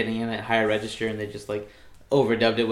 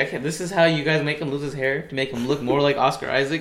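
ordinary talk, nothing marked

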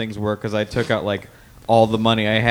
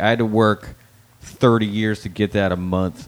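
slow, mock angry, complaining tone. Retelling a father's reaction to a paycheck: imitating someone angry. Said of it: "he got mad at me".

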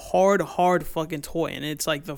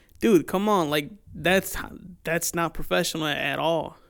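plain

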